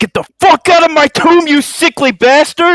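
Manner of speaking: very high, very loud top-of-the-lungs scream. Voicing a charging warrior in a game, screaming at the top of his lungs. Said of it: "Screaming at the top of his lungs".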